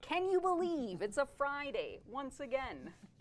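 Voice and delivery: high-pitched TV sales-pitch infomercial announcer voice. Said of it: "a sort of infomercial".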